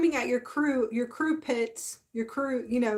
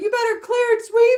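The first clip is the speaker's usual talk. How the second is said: shrill, very high, loud screaming; 11 semitones higher, 9 dB louder than usual. Retelling commanding crews to clear and sweep: imitating own past screaming. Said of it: "I'm screaming at them and going".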